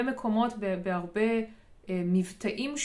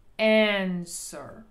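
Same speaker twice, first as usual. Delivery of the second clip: answer: an- stressed hard, -swer shrunk; 4 dB louder than usual. Showing English word stress on answer: strong stress on first syllable of answer. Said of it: "את ה-a אני ממש מדגישה".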